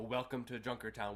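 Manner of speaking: ordinary talk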